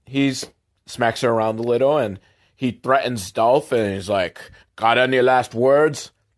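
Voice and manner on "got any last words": clumsy, bad put-on Russian accent. Retelling a scene where a Russian mobster threatens Dolph, in a bad Russian accent. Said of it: "I'm not very good at the Russian accent".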